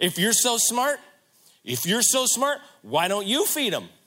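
snarky, sarcastic tone, high and loud. Retelling a reply to the disciples as an acted-out snarky, sarcastic retort. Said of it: "it feels really snarky and sarcastic".

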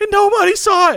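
shrill, very high, full-volume shriek. Recalling hitting a crazy shot with nobody watching, retelling a scream. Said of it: "when I screamed like".

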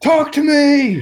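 very high, shrill, demanding yell. Retelling a woman shouting at a doll to talk: imitating a woman shouting. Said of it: "starts shouting at it to start talking".

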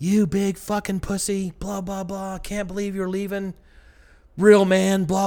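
put-on screaming, very high, shrill and loud. Retelling a woman screaming at him as he walks away from her door, imitating someone screaming. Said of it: "she's just fucking screaming at me".

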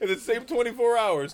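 high-pitched, loud laughing disbelief.

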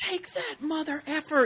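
high, thin mock shout like a fighter.

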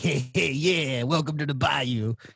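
put-on bayou swamp zombie voice. Imitating how zombies in a swamp-set horror game talk: imitating a bayou zombie. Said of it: "The zombies all talk like".

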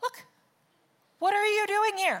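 dry, mocking sarcasm. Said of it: "he's very sarcastic".

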